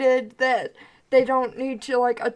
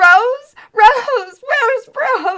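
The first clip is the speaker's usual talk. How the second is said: shrill, high, loud, slow, drawn-out, panicked, frantic calling; 11 semitones higher, 11 dB louder than usual. Voicing a boy who starts freaking out over a missing girl: panicked boy. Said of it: "the boy starts freaking out".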